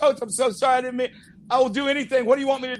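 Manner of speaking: tearful, crying, apologetic voice. Retelling how a player apologized to his coach: imitating a player crying. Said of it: "crying and saying".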